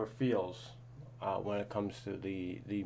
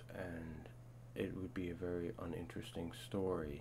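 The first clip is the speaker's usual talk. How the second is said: soft, flat, dull monotone with no inflection; 3 semitones lower, 9 dB quieter than usual. Explaining storytelling in music, speaker demonstrates the dull way; monotone. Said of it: "we could talk all monotone like this".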